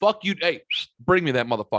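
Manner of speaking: acted harsh, blunt voice. Retelling telling a waiter to bring the check: retelling own mean, blunt demand. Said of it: "I couldn't have been meaner and more direct".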